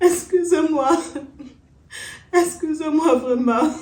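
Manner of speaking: speaking while crying. A character apologizes after being told there is no use crying: tearful apology. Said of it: "tu ne pleures plus".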